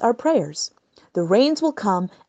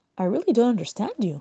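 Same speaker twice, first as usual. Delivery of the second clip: calm, composed, unbothered, quick; 4 dB quieter than usual. Replying to the messenger who demands the water back; calm. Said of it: "Nakdimon replied calmly".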